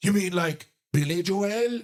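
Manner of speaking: put-on Irish accent with comic delivery. Retelling what the Irish comic answered: imitating an Irish comic. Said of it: "And he goes".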